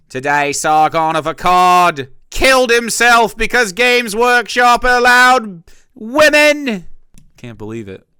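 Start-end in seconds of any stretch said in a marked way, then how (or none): 0.1-6.8 very high, very loud fake British accent. Joking about reading a british newspaper: put-on british accent. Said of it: "It's gonna be a British newspaper, so it'll be like".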